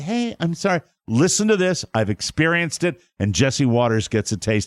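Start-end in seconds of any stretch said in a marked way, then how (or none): 0.0-0.8 put-on baby-talk voice, high and cute. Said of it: "It is so baby talky".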